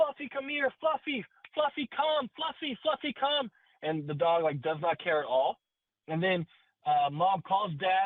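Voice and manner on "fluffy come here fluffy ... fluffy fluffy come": put-on, shrill, very high, repeated calling out. Speaker acts out a mom in the backyard calling the dog: retelling a mom yelling. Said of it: "Mom's in the backyard yelling at the".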